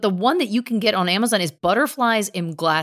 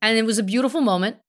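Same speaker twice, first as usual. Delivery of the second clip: usual speaking voice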